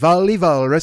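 put-on cartoonish Swedish accent. Speaker recalling an old Woody Woodpecker cartoon, Wally Walrus Swedish accent. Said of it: "he starts talking in that fucking Swedish accent".

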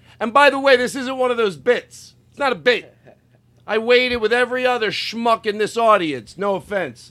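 high-pitched heckling yell.

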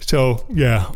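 talking through a yawn. Mid-ramble, the speaker apologizes for being tired, saying this while yawning. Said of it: "sorry, yawning".

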